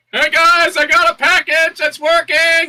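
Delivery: very high-pitched, loud yell. Following a voice inside, the speaker calls back to the group behind, yelling back. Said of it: "I also yell back behind".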